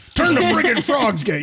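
put-on high, loud ranting delivery in Southern accent. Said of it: "How come the Southern accent is so easy for you".

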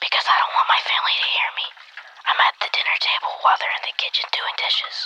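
speaking in a whisper. A kid calling the show answers the hosts, whispering so his family won't hear. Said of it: "Why are we whispering?".

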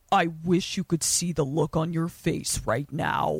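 low-pitched, sinister tone. Retelling a story scene where the vampire taunts Stan: scary Vampire Dahmer voice. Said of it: "and his voice is different".

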